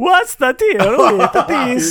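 very high, slow Swedish-accented impression. Asked to do a comedian as if he were Swedish: Swedish Jerry Seinfeld impression. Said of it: "if Jerry Seinfeld was Swedish".

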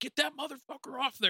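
shrill, very high screaming. Retelling how a man screamed at the crew while loading the trailer: retelling a scream. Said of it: "And he's screaming".

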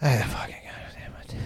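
mock whispered, exasperated, frustrated swearing. Retelling sitting in the back seat of a cop car: imitating oneself frustrated. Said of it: "I'm just sitting there like".

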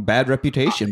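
plain

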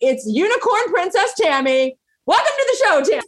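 high, excited, gushing voice. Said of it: "Oh my gosh, she's here, everyone".

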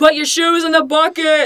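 loud, high-pitched calling out. Acting out airport security agents hurrying travelers: imitating a TSA agent. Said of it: "agents going, like".

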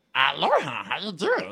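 belted out in a cartoon voice. Asked to do the voice he did for a promotion: Stitch voice. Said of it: "I was doing the voice of Stitch from Lilo and Stitch".

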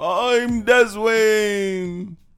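very high-pitched put-on jolly old man voice. Introducing themselves after the co-host opens the show, in a Santa voice. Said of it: "That's my Santa voice".

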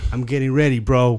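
put-on dead serious, deadpan delivery. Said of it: "dead serious".

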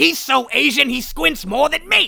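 very high, loud, slow, creaky, shrill, drawn-out rasp. Guessing what the comedian said: Gilbert Gottfried impression. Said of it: "I assume Gilbert Gottfried said something like".

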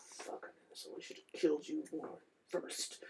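deep growl, almost whispered, hushed. Voicing a character who growls at a player: deep growl. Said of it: "he just growls at you in a deep".

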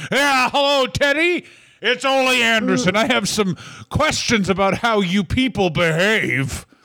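high voice with a full mouth, words chewed through. Acting out Ole Anderson making a phone call, in Ole Anderson impression. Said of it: "like a guy eating a sandwich on the phone".

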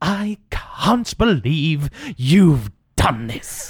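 slow, swooping hiss through the teeth. Asked to do their Orsham impression, performing it: hissing through the teeth. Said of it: "Beautiful hissing through the teeth there".

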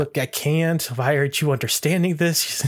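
ordinary talk, nothing marked

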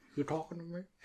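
very quiet murmur, almost under the breath. Doing an impression people praised: Robert De Niro impression. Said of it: "your best one was Robert De Niro".

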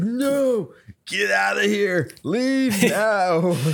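mock, high-pitched, freaked-out outburst. Retelling how a man reacted when shown the ring, retelling someone freaking out. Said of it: "the dude freaks out".

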